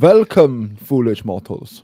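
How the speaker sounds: very loud, booming German accent. Greeting the others on a ride: German Haunted Mansion ghost host voice. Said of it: "Why are you being the Haunted Mansion ghost host, but German?".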